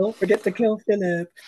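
mock breezy cheerful tone. Quoting a film line about killing Philip: imitating a jovial tone. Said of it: "in such a jovial tone".

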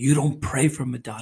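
evil, horrible, demon-like voice. Recounting a voice heard while praying that night: horrible demonic voice. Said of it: "a horrible demonic voice that said".

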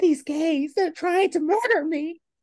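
very high, panicked pleading voice. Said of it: "the panic in her voice".

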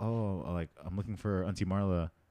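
put-on half-asleep, drowsy voice. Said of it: "half asleep, like, zombie mode".

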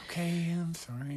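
whispering shyly. A returning guest apologizes to the hosts about the microphone, in a shy whisper. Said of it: "now I'm whispering because I'm shy".

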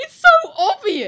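speaking through laughter. Teasing a quiz contestant who can't find the answer, laughing while talking. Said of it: "I can't stop laughing that you haven't got this".

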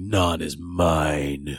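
put-on menacing voice. Recapping a story, quoting Carr as everyone splits up, mock-menacing. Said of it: "said menacingly".

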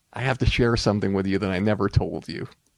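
ordinary talk, nothing marked

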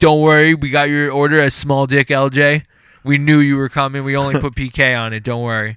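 loud, belted, cocky mock delivery guy voice.

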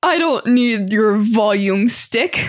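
grand, trained classical theater voice. Retelling how Chris addressed the crowd from the front of the stage, in his theater voice. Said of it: "in his most classically trained theater voice".

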